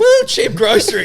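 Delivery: laughing holler, very high and very loud. Imitating four guys at a cheap supermarket: imitating someone laughing while talking. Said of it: "laughing and going".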